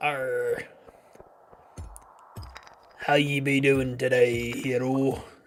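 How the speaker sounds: pirate voice, opening with arr. Asked to talk like a pirate, the speaker greets the hero in a pirate voice. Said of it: "Talk like a pirate".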